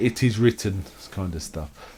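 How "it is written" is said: normal talking voice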